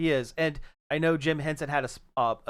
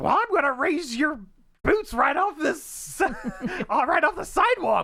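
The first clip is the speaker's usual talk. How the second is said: puppet pig voice, way up high; 13 semitones higher, 4 dB louder than usual. Quoting a line from a Muppet movie: Miss Piggy voice. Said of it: "your Frank Oz is, is pretty close".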